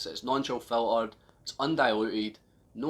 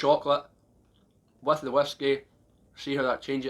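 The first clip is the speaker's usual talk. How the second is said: talking with mouth full, muffled speech; 2 semitones higher than usual. Tasting chocolate with the whiskey, talking with mouth full. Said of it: "I'm talking with my mouth full".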